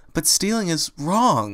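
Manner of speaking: insisting. Fluttershy objects to a companion's plan, insisting. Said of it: "Fluttershy insisted".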